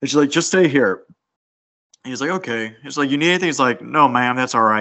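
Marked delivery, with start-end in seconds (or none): 3.8-4.8 strong put-on Kentucky accent. Retelling a scene where a mom asks if he needs anything; answering in a very Kentucky accent. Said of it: "he's got a very Kentucky accent".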